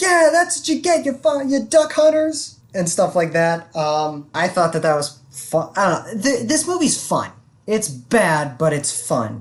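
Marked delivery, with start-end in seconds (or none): 0.0-2.6 put-on shrill, very high screaming rant. Retelling a movie scene with duck hunters: imitating someone screaming. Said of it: "he's screaming at them like".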